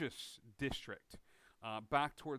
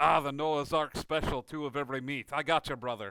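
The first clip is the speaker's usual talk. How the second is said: loud, booming dwarf voice, very loud; 3 semitones higher, 12 dB louder than usual. Narrating a sandwich order, voicing a dwarven man offering meat: dwarf character voice. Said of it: "this dwarven man who walks forward and goes".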